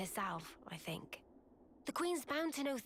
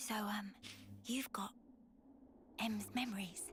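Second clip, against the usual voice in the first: hushed whisper, quieter; 4 dB quieter than usual. Speaking to a companion who then asks why they're whispering, whispering. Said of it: "why are we whispering?".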